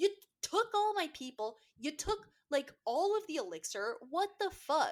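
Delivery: acted-out angry, accusing, pissed-off, high-pitched rant. Retelling a book character's complaint to a co-reader: imitating an angry character. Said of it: "She's pissed, though".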